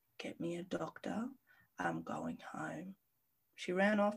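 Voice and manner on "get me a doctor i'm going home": very hushed, clear, calm and slow. Recounting being in bed while a woman looked up at her, retelling her calmest, clearest voice. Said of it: "in the most calmest voice".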